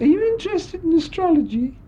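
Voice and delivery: silly showgirl voice. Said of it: "she used to talk in this silly voice".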